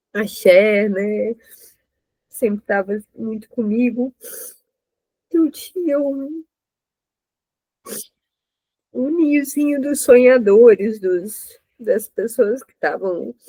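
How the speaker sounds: tearful speech, crying while talking. Remembering a little nest of dreamers in Vitória, crying while talking. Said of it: "não tô entendendo nada esse choro".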